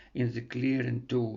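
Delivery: ordinary delivery, nothing marked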